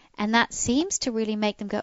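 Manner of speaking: usual speaking voice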